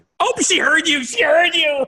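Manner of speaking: playful sing-song tone.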